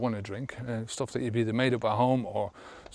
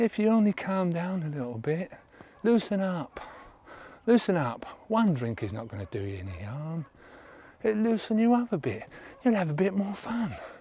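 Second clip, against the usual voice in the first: mock patronising, easy-going, calm, sing-song condescension; 7 semitones higher than usual. Retelling what people say to non-drinkers: imitating calm condescension. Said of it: "quite calmly but condescendingly tell you".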